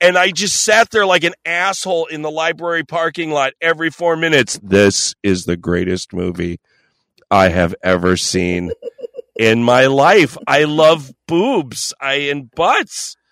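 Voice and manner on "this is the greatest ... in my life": sinks right down to a very low register. Retelling sitting in the library parking lot during the movie: dropping into a lower voice. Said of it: "I just drop into this lower voice".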